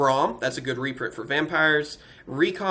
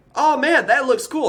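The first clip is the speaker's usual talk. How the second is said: squeaky voice crack, very high; 9 semitones higher, 4 dB louder than usual. Opening card packs and reacting to a card: voice cracking. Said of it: "My voice cracked".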